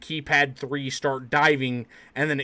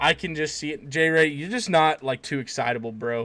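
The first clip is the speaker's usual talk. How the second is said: ordinary delivery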